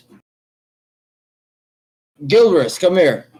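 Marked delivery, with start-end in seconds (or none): 2.3-3.2 high, loud shout carrying across a room. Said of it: "uh, yells out".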